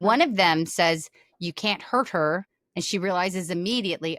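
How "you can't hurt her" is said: normal talking voice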